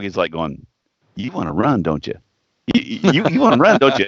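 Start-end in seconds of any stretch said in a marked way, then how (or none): 1.1-4.1 high, coaxing voice like talking to a dog. Retelling how a buddy talked to a drunk friend: imitating talking to a dog. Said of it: "his buddy's talking to him like a dog".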